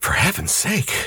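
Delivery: revolted, sickened muttering under the breath. Lois, looking at the hanging dead man, sickened mutter. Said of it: "Lois muttered, sickened".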